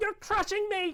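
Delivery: very high, loud, shrill, tiny squeaky voice. Narrator voicing a creature heard inside the listener's head: small squeaking voice. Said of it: "in your head you hear a small squeaking voice".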